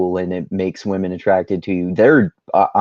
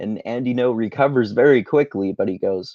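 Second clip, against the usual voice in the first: ordinary talk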